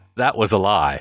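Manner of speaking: put-on voice-over narrator voice. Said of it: "Then you hear the narrator voice".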